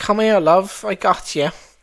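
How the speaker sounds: very loud, high-pitched, heavily laid-on English accent. Recalling characters she played, speaker demonstrates Bronwyn's heavy English accent. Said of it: "like a heavy English accent".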